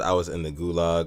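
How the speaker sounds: usual speaking voice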